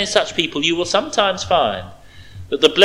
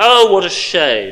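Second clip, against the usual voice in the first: condescending, aloof, superior tone with pity; 4 dB louder than usual. Illustrating how aloof pity speaks to a suffering person; superior, nose-in-the-air tone. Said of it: "says in a superior tone of voice with a nose in the air".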